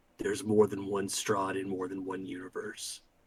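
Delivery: low, very quiet whisper, close into ear. Player's character pulls another close and speaks in his ear, whisper in his ear. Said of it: "I whisper in his ear".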